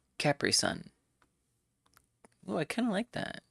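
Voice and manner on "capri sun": first syllable cap stressed in Capri. Explaining where the emphasis goes: stress on cap in capri sun. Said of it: "Emphasis goes on the cap and not the re".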